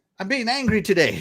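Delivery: mock snarky sarcastic tone. Retelling how they talk to game characters when in a bad mood: imitating own rude attitude. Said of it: "tell 'em all kinds of sarcastic things".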